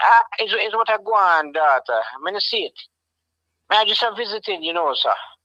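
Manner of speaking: high Jamaican accented speech. Ask whether this is how a granddad talks by trying out a put-on Jamaican accent. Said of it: "That's Jamaican".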